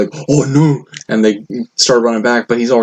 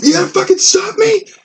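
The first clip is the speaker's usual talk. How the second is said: very high, furious, angry yelling. Recounting a man at Walmart trying to get past them, retelling his angry yelling. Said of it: "yelling at me like".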